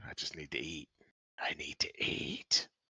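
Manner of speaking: whispered, craving tone.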